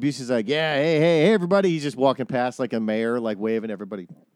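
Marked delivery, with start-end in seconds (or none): none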